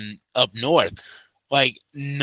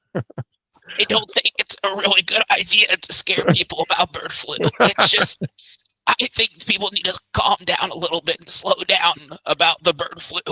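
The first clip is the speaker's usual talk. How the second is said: raspy, hoarse, strained put-on voice, pitched up; 5 semitones higher than usual. Talking about bird flu, doing an RFK Jr. impression. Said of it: "that's a scary good imitation".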